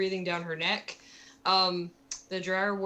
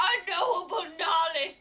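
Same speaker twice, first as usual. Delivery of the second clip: loud yelling. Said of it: "she was yelling".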